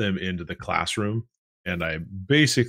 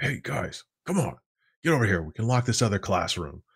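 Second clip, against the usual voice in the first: rushed, hurried whisper, pitched higher; 2 semitones higher than usual. Telling a story, the speaker acts out calling two people into a classroom: retelling a hurried whisper. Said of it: "I kind of like hurriedly whisper to them".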